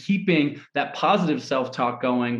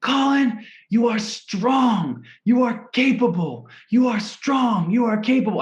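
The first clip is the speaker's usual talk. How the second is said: put-on very high, full-throated, top-of-the-lungs yell; 9 semitones higher, 3 dB louder than usual. Recalling being alone in Antarctica, Colin re-enacts yelling to himself: re-enacting own yelling. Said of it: "So I yell at the top of my lungs".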